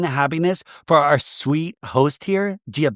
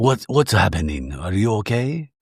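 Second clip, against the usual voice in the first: imitated whispering, pitched lower; 8 semitones lower than usual. Retelling how Giovanni asks Meredith if she's okay: imitating someone whispering. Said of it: "and it whispers".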